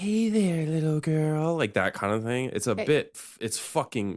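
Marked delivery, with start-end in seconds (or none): 0.0-1.6 high-pitched breathy voice, breath audibly let through. Describing a movie character's voice to the other speaker: high breathy Nicolas Cage character voice. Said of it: "he talks in like high pitched".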